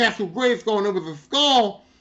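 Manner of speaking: usual speaking voice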